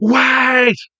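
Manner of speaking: very high, shrill screaming, stretched long. Imitating the original dub's line: imitating Shinji screaming. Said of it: "he's screaming".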